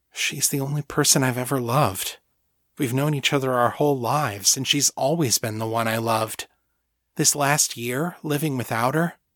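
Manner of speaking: ordinary delivery, nothing marked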